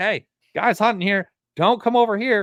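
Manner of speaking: high, screeching squirrel scream. Describing a squirrel giving away a hunter's spot, imitating a screaming squirrel. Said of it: "he's just screaming like".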